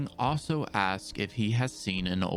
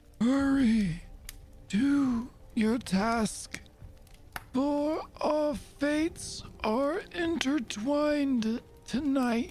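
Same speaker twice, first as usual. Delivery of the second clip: put-on hoarse, raspy, feeble, weak old seer voice, very high. Narrating a scene, voicing an old man in a ragged cloak: raspy, weak old man voice.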